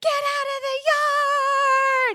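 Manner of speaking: booming, very slow, very high, very loud scream. Retelling a driving mishap, imitating mom screaming. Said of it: "she's screaming at me".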